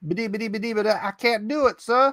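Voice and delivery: stammering "bidi-bidi" sputter at the start. Retelling the scripture story, acting out Moses refusing God: Moses impression. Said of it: "that's probably the wrong way to say it".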